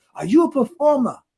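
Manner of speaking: put-on French accent, pitched very high. Retelling a man's question to the speaker, imitating his French accent. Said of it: "he was in his French accent".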